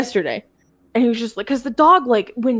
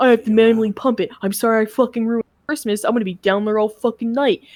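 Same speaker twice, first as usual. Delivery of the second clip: mock-angry ranting voice, pissed-off outburst. Retelling what their dad said while fixing something at Christmas, imitating an angry dad. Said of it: "and he's pissed".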